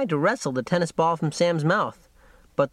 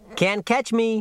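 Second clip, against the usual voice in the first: cheeky, high-pitched, playful teasing tone; 5 semitones higher than usual. Narrator reads Harry dancing just out of Mike's reach with the ball; teasing. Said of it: "he teased".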